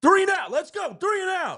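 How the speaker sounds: very high, pumped-up, fired-up rallying holler. Recounting a game, acting out a player yelling at a smack-talking player, retelling fired-up yelling. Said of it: "Fletch is like yelling at him like".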